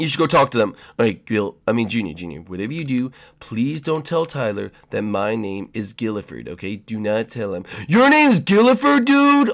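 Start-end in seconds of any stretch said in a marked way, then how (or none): 7.9-9.5 blurted, too loud and pitched way up. Blurting out the name Gilliford: saying it too loudly. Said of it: "why did he say that so loud?".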